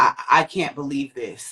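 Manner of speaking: play-acted sobbing, tearful voice. Retelling what a friend said on reaching the injured speaker, imitating someone crying. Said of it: "she's just crying like".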